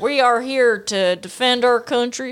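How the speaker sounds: put-on southern American accent. Speaker retells soldiers confronting Majin Buu, quoting them in a southern accent. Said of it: "they have a southern accent".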